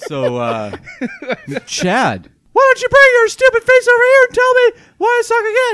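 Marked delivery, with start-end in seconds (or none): 1.7-5.8 put-on shrill girl voice, very high and very loud. Speaker calls Chad over, trying out a put-on girl voice. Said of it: "That's my girl voice".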